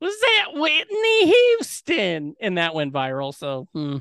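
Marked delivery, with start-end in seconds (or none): 0.0-2.3 put-on very high, slow, swooping old Southern lady voice. Retelling what a little girl said after a trailer: imitating an old southern lady voice. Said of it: "the voice of, like, an old Southern lady".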